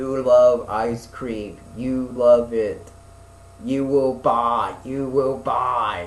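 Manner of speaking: slow, loud robotic voice as if through megaphone. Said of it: "it sounds like Arnold Schwarzenegger on, on, like, a megaphone".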